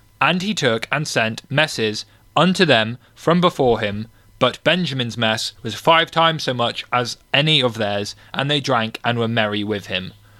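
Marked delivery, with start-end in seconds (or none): none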